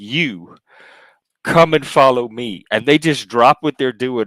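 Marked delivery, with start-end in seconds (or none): 0.0-2.6 slow, commanding voice of authority. Acting out Jesus calling people to follow him: voice of authority. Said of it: "that is the voice of authority right there".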